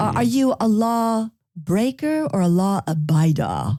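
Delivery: fake British accent, played up. Speaker poses a question to the group: put-on british accent. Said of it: "That's my British accent".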